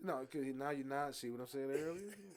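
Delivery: quiet, low-key speech. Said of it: "When I talk low".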